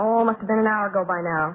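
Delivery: ordinary delivery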